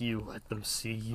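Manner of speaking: very soft, quiet, stern voice. Recapping a scene, quoting Goliath's concerned question: imitating Goliath's stern voice. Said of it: "this stern voice".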